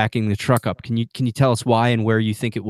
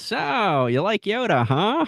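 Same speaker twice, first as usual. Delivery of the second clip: badly done creature voice, very high, slow, sing-song; 10 semitones higher than usual. Retelling a wife's attempt at a voice: bad Yoda impression. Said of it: "my wife's Yoda impersonation".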